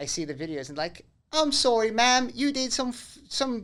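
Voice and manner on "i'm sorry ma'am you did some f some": put-on English policeman accent, high-pitched and slow. Acting out an officer in a video arresting someone: put-on English police accent. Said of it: "this is my accent for".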